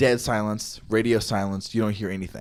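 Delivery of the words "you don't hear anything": normal talking voice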